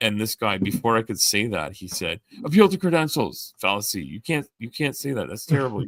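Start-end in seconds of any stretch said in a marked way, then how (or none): 2.4-5.8 shrill, loud yell cutting in. Retelling how a guy cut him off to call out a fallacy, imitating someone yelling. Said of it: "this guy started yelling this out".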